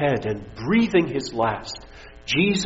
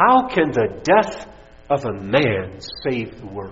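scornful, snide, very sarcastic tone; 3 semitones lower than usual. Retelling a student's question after a presentation at Yale, imitating a sarcastic voice. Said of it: "asked him in a very sarcastic voice".

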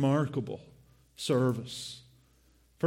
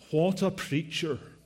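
ordinary talk, nothing marked

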